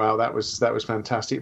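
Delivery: plain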